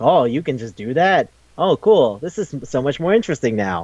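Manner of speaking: ordinary talk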